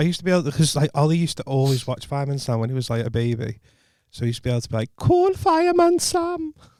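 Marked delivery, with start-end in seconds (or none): 5.0-6.5 very high-pitched, bad attempt at Welsh accent. Imitating a child's old phrase: attempted welsh accent. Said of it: "my attempt at doing a Welsh accent".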